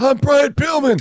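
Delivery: hoarse rasp, high-pitched and slow. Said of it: "it's why he had the hoarse voice".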